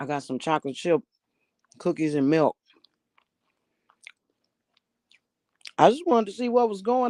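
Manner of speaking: speaking with mouth full while eating. Returning a greeting to another person, eating while talking. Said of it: "I'm stuffing my face".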